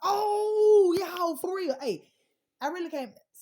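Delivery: bouncy, very energetic, with drawn-out oh. Talking to the audience, admitting to having too much energy: very energetic. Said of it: "Sorry, I got too much energy".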